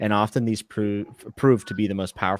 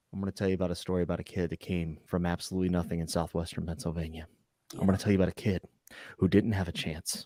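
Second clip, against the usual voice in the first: lowered, dramatic storytelling voice, much quieter; 3 semitones lower, 7 dB quieter than usual. Demonstrating what he does when it's his turn to speak, dropped dramatic voice. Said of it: "I just drop my voice".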